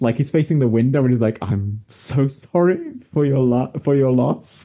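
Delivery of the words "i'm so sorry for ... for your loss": speaking through acted held-back laughter. Retelling a scene where Howard, facing the window, offers condolences: imitating Howard's gritted laugh. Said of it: "through a gritted laugh".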